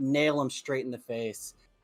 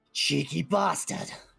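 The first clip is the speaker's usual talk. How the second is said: gruff, rough, creaky villain voice; 4 semitones higher than usual. Voicing a knocked-down enemy who turns to the attacker: voicing the purple enemy. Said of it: "he turns and he looks at you and he's like".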